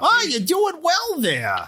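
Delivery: very high-pitched, swooping bugbear creature voice. Playing a bugbear praising another character, in a high-pitched bugbear voice. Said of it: "a bugbear with a high pitched voice".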